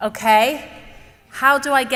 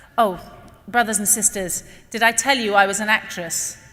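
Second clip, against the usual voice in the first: ordinary delivery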